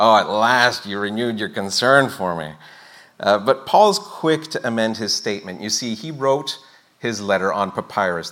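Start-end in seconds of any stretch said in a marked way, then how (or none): 0.0-2.5 passive-aggressive, resentful, backhanded delivery. Showing how a letter's line might sound to modern ears, mock passive-aggressive. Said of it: "it kind of sounds passive-aggressive, like".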